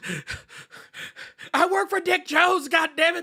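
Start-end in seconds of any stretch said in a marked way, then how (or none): 1.5-3.2 much higher, loud begging yell. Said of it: "He's like".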